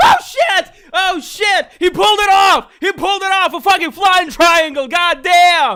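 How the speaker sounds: very loud, high-pitched, thrilled screaming. Speaker calling a fight for ladies and gentlemen as a fighter pulls it off: yelling excitedly. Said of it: "Sorry about yelling".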